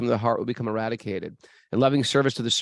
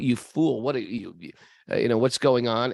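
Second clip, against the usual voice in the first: scornful king voice, heavy with sarcasm, scolding. Retelling a story, acting out the king scolding his carrier: imitating a sarcastic king. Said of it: "The king is being sarcastic".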